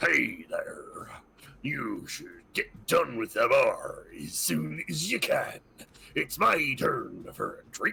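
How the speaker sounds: really rough, gruff character voice. Describing someone calling from behind the players at the bar, in a really gruff voice. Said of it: "this really gruff".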